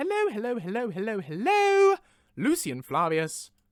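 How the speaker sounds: loud, plummy, upper-class posh voice. Speaker greeting listeners in character right after shout-outs, in a posh voice. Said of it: "It's all gone posh".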